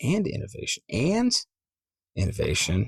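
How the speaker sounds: emphasized "and". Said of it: "How I say ands".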